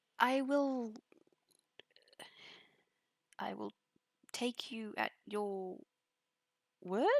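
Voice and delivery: said in a questioning tone. A character answers another's promise that nothing can go wrong, questioning tone. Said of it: "She says questioningly".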